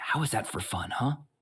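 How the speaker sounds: hushed, soft, whispered aside. Narrating the scene as the character Brie speaks to the group, whispered. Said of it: "Brie kind of like whispers like".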